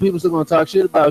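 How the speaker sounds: usual speaking voice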